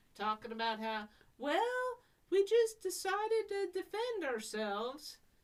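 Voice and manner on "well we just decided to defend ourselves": put-on very high-pitched southern American accent. Retelling own words to a reporter on television: southern accent. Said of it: "with my southern accent".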